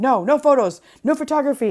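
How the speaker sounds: angry, high, loud scream. Retelling a market seller's reaction to a photo: imitating a woman screaming. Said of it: "She's like".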